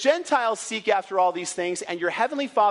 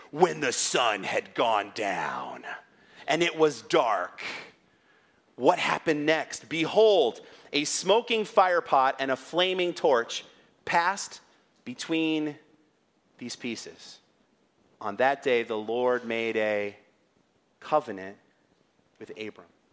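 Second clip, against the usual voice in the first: very low, deep, epic dramatic movie-trailer voiceover; 7 semitones lower, 3 dB quieter than usual. Speaker reading verse 17 aloud to listeners, in a dramatic movie trailer voice. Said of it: "I'm like a movie trailer voice over here".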